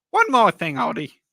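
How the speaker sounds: loud, deep, swooping voice. Doing an impression of Columbo for the others: Columbo impression. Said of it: "That's my impression of him".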